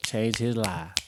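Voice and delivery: Southern American accent with a drawl. Closing an episode, repeating a quote in a Southern accent. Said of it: "You gotta say it like a southern accent".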